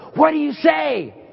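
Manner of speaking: high, loud, carrying stage whisper. Retelling a grandmother prompting her grandson from the shadows: imitating a loud stage whisper. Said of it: "in this real loud stage whisper".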